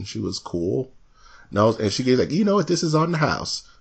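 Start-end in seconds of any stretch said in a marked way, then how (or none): 2.3-3.6 nice little high, light Texas twang. Retelling a woman who gave you a free milkshake, imitating a Texas twang. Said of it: "she had a nice little twang in her voice".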